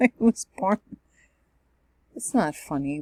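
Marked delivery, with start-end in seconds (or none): 0.0-0.8 laughing through words while talking, louder. Telling when a sibling was born, laughing while talking. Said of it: "Why are you laughing?".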